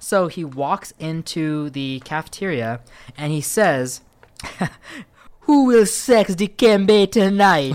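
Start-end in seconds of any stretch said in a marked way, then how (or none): 5.4-7.8 very loud, booming put-on Jamaican accent. Telling a story, quoting Dikembe Mutombo walking into the cafeteria, in a put-on Jamaican accent. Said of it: "I don't know how to do a Zairean accent".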